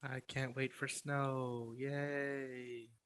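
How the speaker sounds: sarcastic, fake excited, slow, soft mock cheer.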